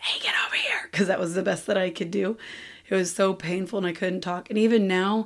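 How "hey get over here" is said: whisper-yell, loud but breathy. Retelling calling the kids while voiceless: imitating a whisper yell. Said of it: "whisper yelling at my kids".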